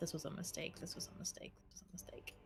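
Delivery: muttering under breath. A player narrates their character walking away from Ollie, muttering under her breath. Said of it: "she's like muttering under her breath".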